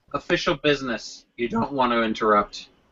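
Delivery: soft, quiet, low half-whisper. Speaking in character, slipping toward the orc to tell him: half-whispering quietly. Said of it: "whisper to him quietly and say".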